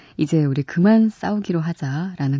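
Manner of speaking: plain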